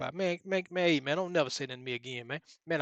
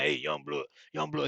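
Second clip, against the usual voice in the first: put-on raspy man's voice. Retelling how Troy came over to him at the gym: imitating Troy's raspy voice. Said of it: "He had a real raspy voice".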